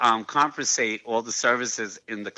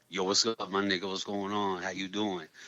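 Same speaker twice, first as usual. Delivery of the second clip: fast, soft put-on New York accent; 3 semitones lower, 7 dB quieter than usual. Speaker shows listeners who know him his old intro voice: put-on New York voice. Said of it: "That was my New York donut and my AOL voice".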